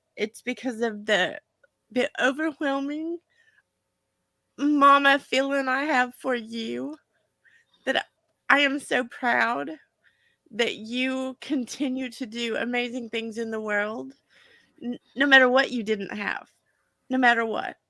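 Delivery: crying through the words. Speaking directly to another person, crying while speaking. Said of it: "I'm actually crying for a different reason".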